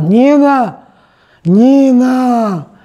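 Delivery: put-on loud drunken hollering, Нина stretched long. Retelling how her drunk grandfather yelled while she put a baby to sleep: imitating drunken yelling. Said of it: "дедуля пьяный лежал и орал".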